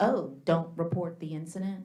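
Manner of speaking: plain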